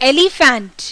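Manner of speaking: elephant with ele rushed and stress on phant. Explaining word stress with elephant as example: stress on phant in elephant. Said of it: "एली को मैंने फटाफट बोला, faint को थोड़ा stress देकर".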